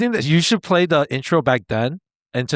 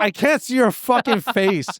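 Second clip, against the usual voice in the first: put-on fed-up angry voice, high, slow, drawn-out; 8 semitones higher than usual. Retelling how Linji got mad at the sunglasses: imitating Linji getting mad. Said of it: "And Linji got so mad".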